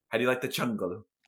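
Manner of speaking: hammy, silly put-on German villain accent. Quoting the German villain from the movie: imitating his silly German accent. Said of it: "His accent was, like, mad funny ... when he's like".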